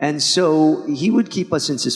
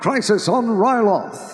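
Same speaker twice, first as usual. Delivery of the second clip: narrator voice, pitched up, newsreel announcer style; 7 semitones higher than usual. Imitating the narrator's episode opening: Tom Kane narrator voice. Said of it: "he would do this amazing".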